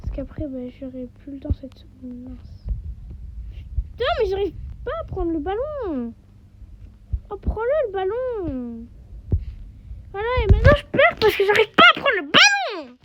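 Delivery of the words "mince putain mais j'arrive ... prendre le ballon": raging, frustrated, high-pitched swooping angry voice. Playing a game and failing to grab the ball: raging at the game. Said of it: "je suis en train de rager".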